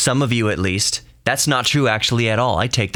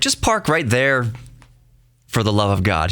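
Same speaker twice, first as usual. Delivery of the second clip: dripping sarcasm, mock insistence, swooping sing-song. Retelling what he said about where to park: imitating sarcastic tone. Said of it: "he was being sarcastic".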